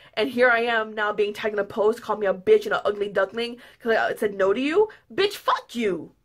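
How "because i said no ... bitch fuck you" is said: worked-up, furious, heated angry retort. Upset about being tagged in an insulting post, the speaker is getting heated. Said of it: "Now I'm getting heated".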